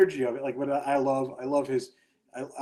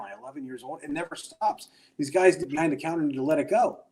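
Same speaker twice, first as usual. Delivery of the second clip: ordinary talk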